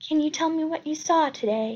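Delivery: gentle, kindly, sympathetic and understanding tone. A woman questions a man after the crime, asked softly. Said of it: "she asks softly".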